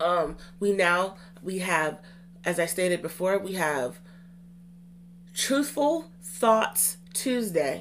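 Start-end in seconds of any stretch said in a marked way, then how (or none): 5.3-7.8 very slow, drawn-out delivery. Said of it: "you have to say it slow".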